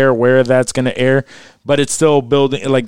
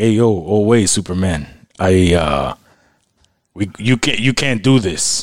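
slow, hesitant, stumbling character voice; 5 semitones lower than usual. Imagining an actor arriving as Superman's father: imitating Tony Danza. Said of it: "I can just imagine him coming in like".

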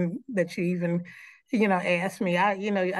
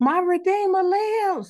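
put-on very high, bold little-kid scream; 12 semitones higher, 4 dB louder than usual. Retelling a young child at an Easter program: imitating a child screaming. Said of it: "he just screamed into the mic".

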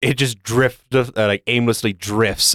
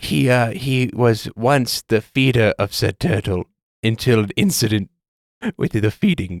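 stifling laughter partway through. Voicing a character telling about a turtle incident: suppressing laughter, talking quietly. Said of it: "trying to hold it in and is talking so quietly".

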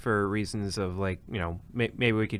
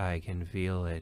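slow, soft, hushed, flat monotone; 3 semitones lower, 5 dB quieter than usual. Discussing HAL and Bowman, acting out HAL's monotone mock-pleading. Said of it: "in the most monotone version ever, is just pleading".

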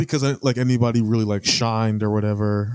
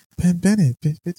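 put-on high cooing baby talk; 7 semitones higher than usual. Reviewing a show, mocking a character's annoying habit: Shirley's baby voice. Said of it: "Shirley's baby voice".

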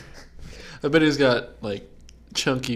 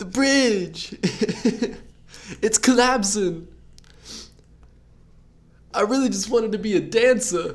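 very high-pitched screeching voice; 10 semitones higher, 4 dB louder than usual. Asked to show how the character would sound, perform a Travolta mix voice. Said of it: "how it would sound".

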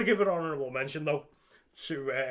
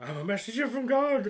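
put-on crazy man voice, higher; 8 semitones higher than usual. Retelling a horror film scene, quoting the character Ralph: imitating Ralph. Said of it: "the crazy man's there".

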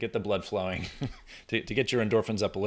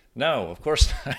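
plain

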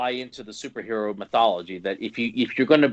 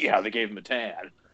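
soft, put-on sarcastic little jab; 5 dB quieter than usual. Teasing the other speaker by repeating their line: imitating a sarcastic remark. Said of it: "a little sarcasm there when you say that".

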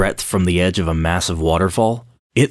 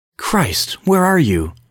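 very high-pitched call, full of concern and desperation; 10 semitones higher than usual. He has just heard the narrator's keywords and calls out, concerned and desperate. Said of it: "So filled with concern and desperation".

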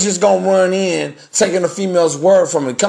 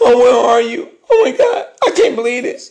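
high, whiny, put-on weepy wailing and fake sobbing; 5 semitones higher than usual. Mocking her younger self falling for daddy's little girl syndrome, mock crying. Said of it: "All the waterworks".

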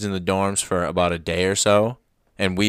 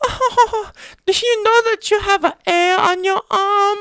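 put-on very high, slow, carefully spaced, raised girl's voice; 5 dB louder than usual. Retelling what a girl from south korea said: imitating her delivery. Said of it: "that's legit what she said, like, how she said it".

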